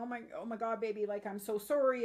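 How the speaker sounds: acted, tearful crying voice. Retelling being startled by her son, acting out a tearful apology. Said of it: "I was so startled and I started to cry".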